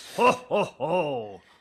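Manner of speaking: very high, robust, hearty ho-ho-ho laugh. Showing how the laugh should sound: robust ho-ho-ho laugh. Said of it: "Just it's robust".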